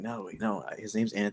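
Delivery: whispered words. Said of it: "me and Avi were both, like, whispering".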